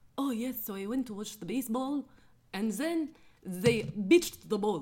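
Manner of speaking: very loud, high Arabic accent, p said as b. Showing how pitch sounds with an Arabic accent, p as b. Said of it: "Say pitch with an accent, like an Arabic accent?".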